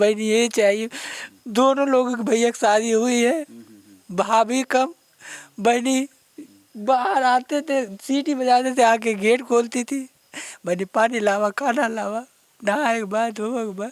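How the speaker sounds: high, tearful wailing, crying while speaking.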